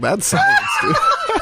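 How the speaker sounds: high-pitched, shouted, laughing, insistent voice.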